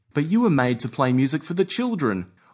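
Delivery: ordinary delivery, nothing marked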